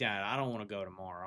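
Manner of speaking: mock weepy kid voice, tearful, near crying. Retelling a call from a son who does not want to go: imitating crying son. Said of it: "he calls me kinda, like, crying".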